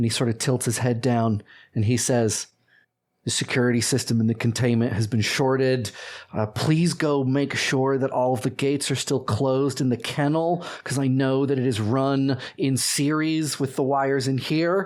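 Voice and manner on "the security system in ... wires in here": plain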